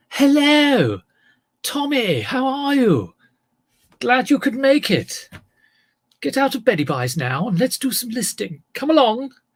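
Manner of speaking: put-on posh drawl, stretched vowels, very high. Answering Tommy's remark, the speaker shows what a posh voice is: posh voice, elongated vowels. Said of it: "can I do a posh voice?".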